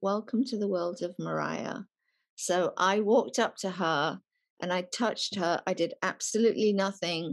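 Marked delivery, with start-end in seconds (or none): 0.0-1.8 quiet, soft, hushed voice. Recalling how her manager laughed at the speaker, the speaker quotes him speaking quietly. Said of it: "he said to me quietly".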